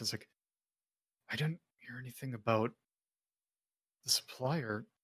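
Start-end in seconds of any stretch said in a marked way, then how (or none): 1.3-4.8 muttered under the breath, quieter. Voicing a character who pauses from his book: muttering under his breath. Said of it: "hear under his breath".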